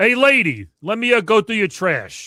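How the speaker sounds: booming, very loud, slow New York accent. Performing the line from a commercial after being asked: deep new york voice. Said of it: "that deep New York kinda, kinda voice".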